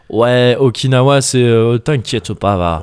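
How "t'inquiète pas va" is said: accent of Marseille. Describing how relaxed people are, speaking in a put-on Marseille accent. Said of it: "c'est les Marseillais".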